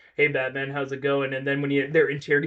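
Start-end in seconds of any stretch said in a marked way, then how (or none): 0.2-1.3 put-on casual, offhand voice, lower. Describing a movie scene, the speaker mimics a character greeting batman: mimicking a casual movie character. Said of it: "and he's like".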